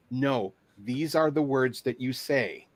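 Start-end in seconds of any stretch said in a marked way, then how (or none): none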